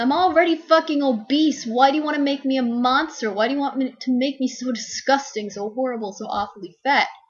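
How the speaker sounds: high, loud, furious outraged yelling. Explaining an analogy to listeners, acting out yelling. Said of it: "you're yelling".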